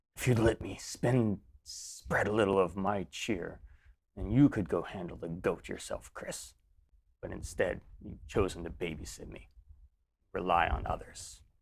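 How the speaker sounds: deep, soft, gravelly character voice. A voice from inside a sack speaks to Chris, in a deep, gravelly voice. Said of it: "it is a deep, kind of gravelly voice".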